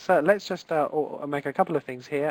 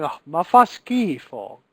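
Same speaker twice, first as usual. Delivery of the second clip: very slow, loud, drawn-out, heartfelt disgusted cry; 6 dB louder than usual. Teaching online viewers a phrase and how to say it, said with passion. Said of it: "You need to say it with passion".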